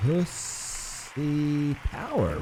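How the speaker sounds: slow reading with each word drawn out.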